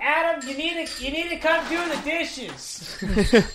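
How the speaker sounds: very high, nagging, scolding parent voice. Imitating a parent heard in the background of an online game: imitating a parent in the background. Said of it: "someone's parent in the background".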